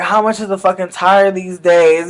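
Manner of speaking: normal talking voice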